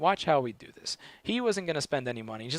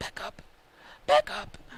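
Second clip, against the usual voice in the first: ghost character voice; 13 semitones higher than usual. Retelling what he said back during a conversation, in a Casper the Ghost voice. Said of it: "it was like a Casper the Ghost voice".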